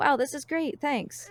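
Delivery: acted flat deadpan. Retelling thanking someone for a Christmas gift: imitating own flat delivery. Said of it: "nothing is really happening".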